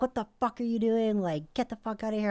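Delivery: mock yell, screamed at high pitch. Telling the story of a guy at the speaker's door, retelling a scream through the door. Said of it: "I'm like screaming through the door".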